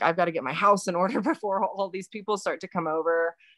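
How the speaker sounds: acted-out frantic, panicked delivery. Retelling own thoughts while rushing to clean: imitating own panicked thought.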